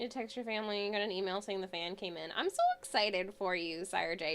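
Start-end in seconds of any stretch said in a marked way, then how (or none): 2.3-4.3 slow line with a squeak breaking into the voice. Congratulating sire j after the fan money came in, voice squeaking. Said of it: "my voice just squeaked there".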